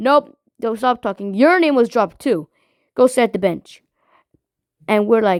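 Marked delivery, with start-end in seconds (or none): none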